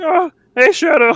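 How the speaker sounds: very high, loud, goofy squeaky voice. Retelling playing a level by talking like Vector: goofy Vector voice. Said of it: "talking like Vector, like Barney Gumble".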